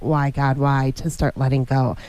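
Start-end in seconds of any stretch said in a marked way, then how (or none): none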